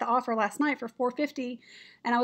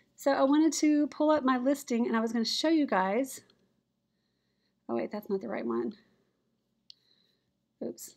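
speaking while breathing hard and heavily. Pulling up a listing to show viewers, breathing hard while talking. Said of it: "listen to me all breathing hard".

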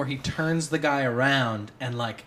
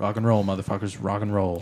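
acted low, flat, effortless deadpan delivery; 5 semitones lower than usual. Quoting how he said it into the mic, retelling a deadpan line. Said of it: "almost deadpan".

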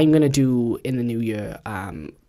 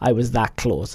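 normal talking voice

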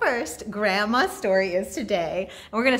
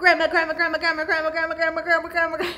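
rattled off as fast as possible, pitched-up, repeated; 7 semitones higher than usual. Leading listeners at home in a clapping rhyme game, saying grandma very fast. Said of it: "Let's say grandma as fast as we can".

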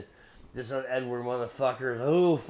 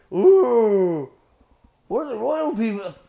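mock-royal voice, much higher, louder, slower; 9 semitones higher, 12 dB louder than usual. Ranting about the british, the speaker mocks royalty in an affected voice. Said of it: "mocking royalty in an affected voice".

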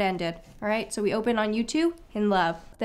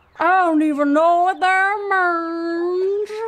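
very loud, high, layered mockery, "means" stretched; 8 semitones higher, 8 dB louder than usual. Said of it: "this is you imitating me imitating you".

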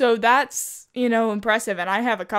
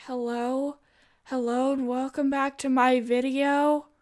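put-on timid voice, slower; 3 semitones higher, 4 dB quieter than usual. A creator mimics how they sounded recording with the mic far away, timid. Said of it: "I sound so timid in this".

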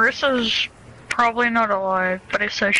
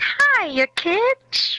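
cartoon mouse voice, much higher pitch; 11 semitones higher than usual. Joking around with others mid-game, in a Mickey Mouse voice. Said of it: "it's Mickey Mouse".

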